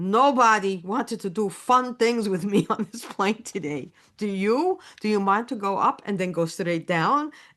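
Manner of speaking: put-on German-accented voice. Retelling what a German-born pilot asked him on a plane, imitating a German accent. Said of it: "He still had a German accent".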